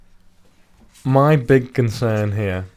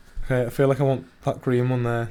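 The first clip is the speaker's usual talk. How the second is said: ordinary delivery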